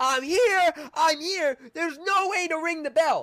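shrill, very high, drawn-out, stretched-out calling yell. Retelling how a little girl at the top of a carnival climb yelled: imitating a girl yelling. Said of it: "She starts yelling".

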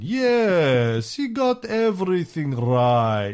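bad put-on Russian accent, drawn-out "yes". Quoting Stalin's remark about another leader's radio talks, in a bad Russian accent as Stalin. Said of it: "That's my Russian accent".

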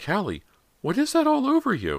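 insistent, pitched way up with swooping tone. A mother hangs back from her daughter and questions her, demanding. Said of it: "she demanded".

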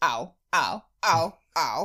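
very slow, drawn-out put-on cartoon-character ow. Asked to impersonate a character from the episode, doing Lumpy voice. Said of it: "I'm going to just do Lumpy because it's easier".

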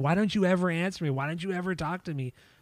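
very angry, freaking-out outburst. Retelling a backstage moment from a tour DVD: imitating someone getting mad. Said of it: "gets really, really mad at her".

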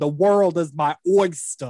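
put-on slow, drawling New York accent. Recalling a mobster scene on GH, quoting Carlos in his New York accent. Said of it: "where did you get a New York accent from?".

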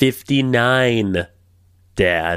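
put-on pleading, begging daughter voice. Doing an Ivanka Trump impression, asking her father for missiles. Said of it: "Do your best impression of Inva-, of Ivanka Trump".

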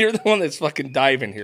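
plain

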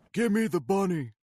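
high yelling. Joking about a movie line, imitating Nicolas Cage yelling. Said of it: "Nicolas Cage is, I think, yelling at someone".

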